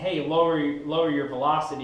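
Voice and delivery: plain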